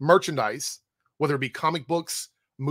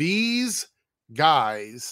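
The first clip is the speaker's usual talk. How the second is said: speaking very slowly, extra slow delivery. Repeating a point for listeners, saying it again very slowly. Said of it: "I'm going to say it again very slowly".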